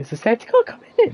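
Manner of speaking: sudden, unexpected, very high-pitched voice. Breaking off from reading trivia, suddenly in a very high-pitched voice. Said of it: "That was a very high pitched voice there".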